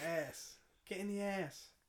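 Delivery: fake Yorkshire farmer accent. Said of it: "like, a farmer, like, a Yorkshire accent".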